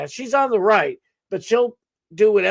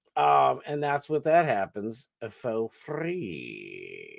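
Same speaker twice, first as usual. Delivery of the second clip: ordinary talk, nothing marked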